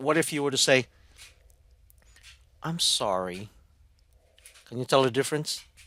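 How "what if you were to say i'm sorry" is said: unhurried, sincere, slow and caring delivery. Showing listeners how to say sorry with a different tone, slow apology. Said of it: "You slow down".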